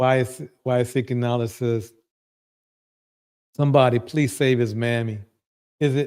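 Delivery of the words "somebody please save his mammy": ordinary talk, nothing marked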